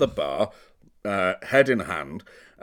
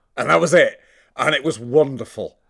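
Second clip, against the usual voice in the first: ordinary delivery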